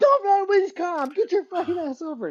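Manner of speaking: very high, shrieking scream. Telling a story, the speaker acts out a man imitating a man screaming. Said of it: "just like the opposite of how you're supposed to be".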